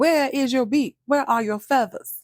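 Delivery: high demanding call-out tone. Retelling a man insulting a woman as a hen: Nene Leakes tone. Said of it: "He said it just like that".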